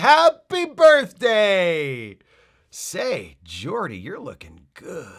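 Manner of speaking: lively, swooping, drawn-out voice. Retelling a hologram suddenly coming to life: lively Leah Brahms voice. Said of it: "Hollow Leah comes to life like".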